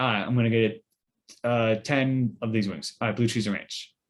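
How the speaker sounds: usual speaking voice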